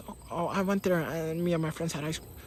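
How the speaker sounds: squeaky, pitchy, high, rushed tumble of words. Showing a way of talking that gets no respect, squeaky, pitchy, fast voice. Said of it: "you often sound like this and talking fast".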